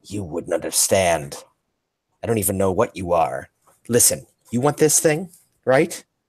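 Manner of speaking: sulky, snarling growl, pitch climbing. Luna turns on Nula, who has just spoken: Luna growling. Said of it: "Luna turns and growls like".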